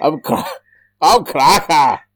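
very slow, very high attempted Scottish accent. Imitating Robbie Coltrane as Cracker: attempted Scottish accent. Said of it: "that sounded passable to me".

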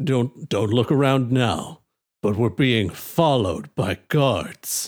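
low, subtle, discreet voice. Narrating a game scene, a character warns two others about guards: low and subtle. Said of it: "trying to keep it low and subtle".

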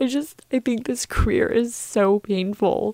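speaking through tears. Apologizing to the guys for always crying, crying while talking. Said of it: "I don't know why I always cry".

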